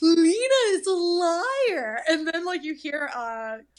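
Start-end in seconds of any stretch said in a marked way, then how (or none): 0.0-2.0 play-acted, very slow, loud, swooping accusing, "liar" stretched. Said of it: "she says it kind of like that".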